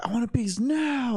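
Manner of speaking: put-on very high, drawn-out, rude, bratty kid yelling. Retelling how a disrespectful kid demanded cake: imitating a kid yelling. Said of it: "fucking yelling at her".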